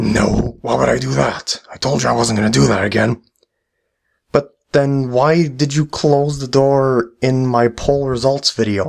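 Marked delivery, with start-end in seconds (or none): 0.0-3.2 sinister, rough, creaky evil villain voice. Answering a question in a skit as the evil voice guy: evil voice. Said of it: "Evil voice guy".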